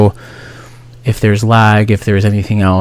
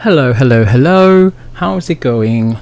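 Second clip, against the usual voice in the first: fake English accent, higher and slower; 3 semitones higher than usual. Saying hello after a silly musical intro, in a put-on English accent. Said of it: "I don't know why I come up with an English accent".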